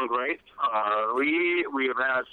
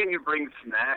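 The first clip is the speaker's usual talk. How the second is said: ordinary talk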